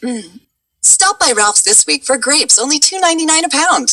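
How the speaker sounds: very high-pitched radio commercial voiceover. Answering a request to show the grocery store spot: grocery commercial voiceover read. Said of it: "what does Ralph's spot sound like in Sissy's voice".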